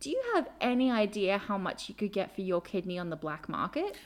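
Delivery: mock dry, deadpan, dead-serious delivery. Retelling what a man said with a straight face: imitating a deadpan delivery. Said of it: "deadpan face, and he says to me".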